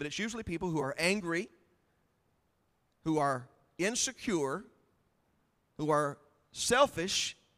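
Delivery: very slow, deliberate, each phrase drawn out. Speaker drawing on scripture, slowing down so listeners absorb it, saying it slowly. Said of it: "I'm going to say this slow".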